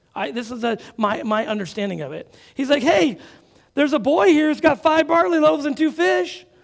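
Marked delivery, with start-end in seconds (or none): 2.9-6.4 raised, high, tongue-in-cheek, sarcastic joking tone, acted out. Retelling Andrew telling a joke about the loaves: imitating Andrew's sarcastic joke.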